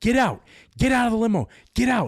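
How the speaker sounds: shrill, very high-pitched, loud yelling. Retelling how the limo driver yelled at everyone to leave: imitating a driver yelling. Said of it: "this limo driver starts yelling".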